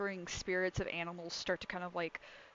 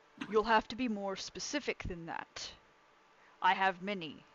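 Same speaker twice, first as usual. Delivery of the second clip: disembodied voice rising up from below. Game master voices a being answering the players from beneath the ground, booming. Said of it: "you hear a booming voice kind of just come up from the ground itself".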